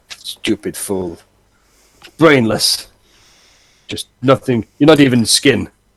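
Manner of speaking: low mutter under breath. Voicing a vampire just after it stabs someone: muttering under his breath. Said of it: "mutter under his breath".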